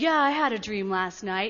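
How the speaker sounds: put-on, mock-drunk voice. Retelling a man's answer when asked about his dream, imitating a drunk voice. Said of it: "in a really drunk voice".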